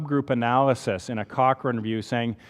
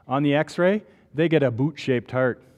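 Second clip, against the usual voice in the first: heavy, put-on Canadian accent, laid on full. Explaining a heart defect, speaker gives the x-ray finding in full canadian accent. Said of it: "throw on my full Canadian accent".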